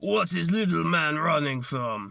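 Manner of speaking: put-on surprisingly good, solid Russian accent. Retelling a cosplayer looking down at him after a fall, Heavy Weapons Guy Russian accent. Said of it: "in a surprisingly good Russian act".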